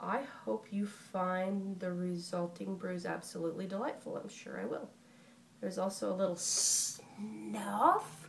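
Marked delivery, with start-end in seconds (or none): none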